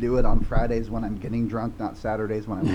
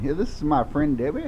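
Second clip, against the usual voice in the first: put-on pitched-up voice of an 80-year-old man; 5 semitones higher, 4 dB quieter than usual. Speaker shows how he sounded introducing a friend, in an 80-year-old man voice. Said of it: "I sound like an 80-year-old guy introducing his girlfriend".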